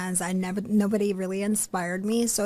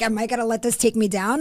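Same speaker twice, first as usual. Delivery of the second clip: ordinary talk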